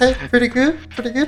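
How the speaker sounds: mock unbroken young voice. Recalling how they sounded back then, imitating own pre-puberty voice. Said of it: "You gonna do the voice?".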